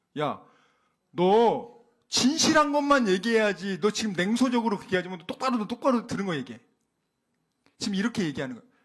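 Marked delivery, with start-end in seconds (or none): 0.2-6.6 mock heated, angry, royal king voice. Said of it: "듣자마자 지금 열받아서 얘기하는 거예요".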